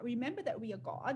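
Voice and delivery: ordinary talk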